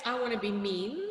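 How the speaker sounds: normal talking voice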